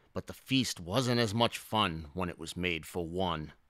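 ordinary delivery

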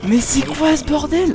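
high, slow, drawn-out outraged cry.

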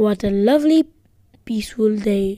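ordinary talk

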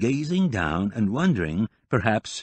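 ordinary delivery

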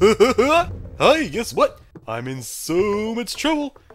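very high, slow speech through giggles. Playing a game with another player, laughing while talking. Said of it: "Why are you laughing then?".

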